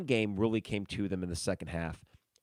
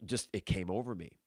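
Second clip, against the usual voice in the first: ordinary talk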